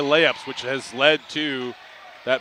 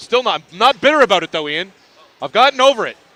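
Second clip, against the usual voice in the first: very loud, high-pitched raised voice; 6 semitones higher, 9 dB louder than usual. Speaking to Ian about a disputed player-of-the-game call, in a raised voice. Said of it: "I don't know why I'm raising my voice".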